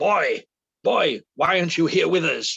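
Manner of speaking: big, slow, loud, booming character voice. Retelling a phone call when someone took the phone, in a loud booming Mr Bronson voice. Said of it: "this really loud, booming voice goes".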